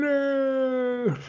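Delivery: very high yell with the word "no" stretched long. Imitating the voice from the film yelling: imitating Darth Vader yelling. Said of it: "that voice yelling and going".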